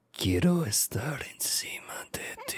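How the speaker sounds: slow, breathy, creepy, dirty whisper. Retelling what a player said close up on his mic: imitating creepy, dirty talk. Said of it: "speaking really, like, creepy and dirty".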